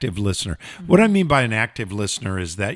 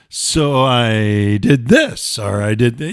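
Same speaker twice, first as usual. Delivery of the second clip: rude, mocking, sarcastic, very slow; 4 dB louder than usual. Showing how restating a partner's words can sound rude: sarcastic rude tone. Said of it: "a tone in your voice that is sarcastic".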